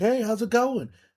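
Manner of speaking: put-on very high, gushing, overexcited voice. Retelling a coworker's greeting, imitating an overexcited coworker. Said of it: "You're way too excited".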